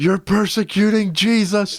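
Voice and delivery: put-on, very high-pitched yell. Retelling how a man being dragged out was fighting: imitating a man yelling. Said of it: "he's yelling. He's like".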